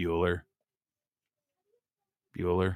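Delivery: said in a bored tone. Joking that some shows are boring: boring Ferris Bueller's Day Off teacher voice. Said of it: "as boring as that teacher from Ferris Bueller's Day Off".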